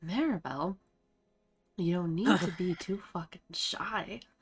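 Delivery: put-on whisper. Retelling a story, acting out what one woman told another: retelling a whisper. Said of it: "She whispers this to".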